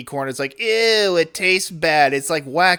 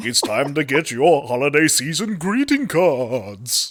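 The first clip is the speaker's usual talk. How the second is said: eerie, spooky voice, "cards" drawn out; 2 semitones lower than usual. Reading out a holiday greeting card ad in a spooky voice. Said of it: "still doing the spooky voice".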